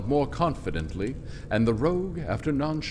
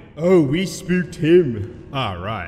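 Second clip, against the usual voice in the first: slow, raised, sarcastic tone laced with irony; 7 dB louder than usual. Narrating a monk's reply to a companion's excuse, said sarcastically. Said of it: "The monk remarked sarcastically".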